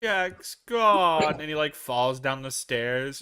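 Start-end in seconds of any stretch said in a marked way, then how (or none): 0.0-1.4 theatrical, over-the-top, loud, high outcry. Retelling a movie scene, quoting the Mayor: overdramatic Mayor voice. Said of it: "He's so overdramatic".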